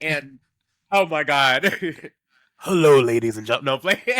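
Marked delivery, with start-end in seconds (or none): 2.6-3.7 put-on loud, quick elderly man's voice. Urged to do it, speaker shows off their old man voice. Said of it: "I can do a really good old man voice".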